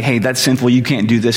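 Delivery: ordinary talk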